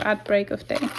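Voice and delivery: ordinary delivery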